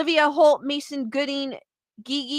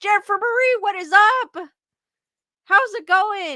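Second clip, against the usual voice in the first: voice cracking and breaking upward mid-word; 6 semitones higher than usual. Greeting someone by name mid-talk, voice cracking. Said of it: "I don't know why my voice cracked".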